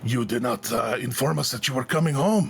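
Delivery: words growled out. Telling a story, voicing a man who grabs the keys and moves to the gate, growling. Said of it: "he kind of growls out".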